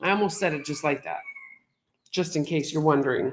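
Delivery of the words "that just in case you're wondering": ordinary talk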